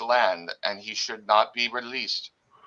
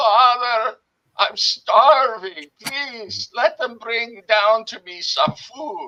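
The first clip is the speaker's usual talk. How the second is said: put-on young man's very high-pitched, loud cry; 12 semitones higher, 5 dB louder than usual. Narrating a young man's voice from beneath the chapel floor: young man crying out. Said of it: "cry out".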